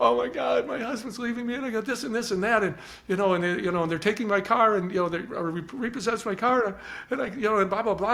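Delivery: play-acted, high, tearful, blubbering sobbing voice. Retelling a woman in a store who broke down to the speaker: imitating someone crying. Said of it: "she just started crying".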